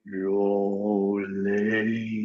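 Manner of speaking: very deep baritone bass, slow and drawn out. Retelling how a woman's voice sounded turned low, deep bass voice. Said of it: "a deep bass going".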